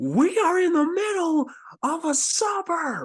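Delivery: shrill, booming, very loud, high-pitched put-on yell. Shouting at a teammate during a game scene: yelling in character. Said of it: "I'm yelling that".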